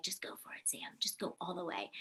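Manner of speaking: hushed, urging, encouraging whisper. Retelling encouragement whispered before a final audition: imitating a whisper. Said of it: "Eric whispers to me".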